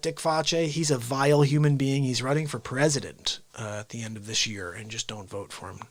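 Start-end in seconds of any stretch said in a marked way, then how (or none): none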